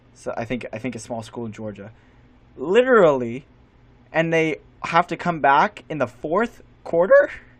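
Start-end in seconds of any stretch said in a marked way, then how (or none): 2.6-7.3 voice breaking, cracking on a word. Recapping a football game, voice cracking mid-sentence. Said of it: "Excuse me for that voice crack".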